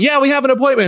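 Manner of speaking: loud shouted line, pitched very high. Retelling a trailer scene where a character yells back: imitating someone yelling. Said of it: "Peter Quill starts yelling".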